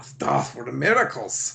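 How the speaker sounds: strong put-on German accent. Redoing another speaker's quote with more accent: Strucker German accent. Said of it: "you didn't say it with a German enough accent".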